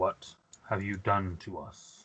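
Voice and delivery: flat droning monotone, very low and very soft. Game narrator voicing a creature with a gun-like head, in a kind of monotone voice. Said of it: "in his kind of monotone voice".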